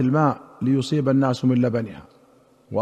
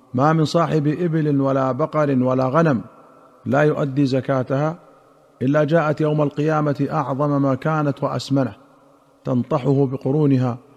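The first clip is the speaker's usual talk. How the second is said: plain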